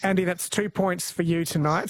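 normal talking voice

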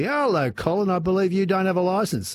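smug, self-satisfied voice at a very high pitch. Retelling how a local cop pulled him over: mimicking a smug cop. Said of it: "said smugly".

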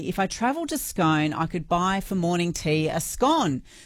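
ordinary talk, nothing marked

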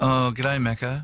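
ordinary delivery

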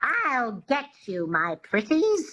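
high, menacing, classic movie wicked-witch voice. Instructor demonstrating a sound for listeners to copy, Wicked Witch voice. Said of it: "Just say that".

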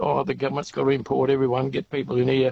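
plain

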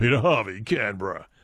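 mock deep news-reporter voice. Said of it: "That was the deep voice".

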